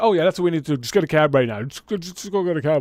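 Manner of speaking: heavy, thorough sarcasm throughout. Retelling a teammate's reply to a request for a cab: imitating Frank being sarcastic. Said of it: "all, all sarcastic".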